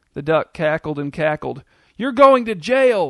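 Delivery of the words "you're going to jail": high-pitched, loud shout at full tilt. Charlene at an egg-throwing duck while her daughter begs her to run: shouting. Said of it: "shouted Charlene".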